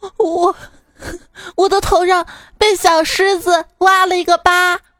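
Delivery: put-on high, sobbing, crying voice of a hurt little child.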